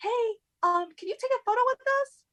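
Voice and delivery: eager, high-pitched voice. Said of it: "and she was like".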